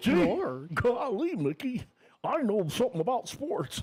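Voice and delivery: high, swooping, slow, drawn-out cartoon voice. Joking about the sports programming with a co-host: Goofy voice.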